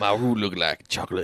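put-on Cajun accent. Cajun [name] is back after a long time, put-on Cajun accent. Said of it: "How is it down in the bayou?".

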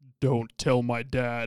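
deepest voice, slow and loud. Recalling what they said as a three-year-old, in a very deep voice. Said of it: "in the deepest voice".

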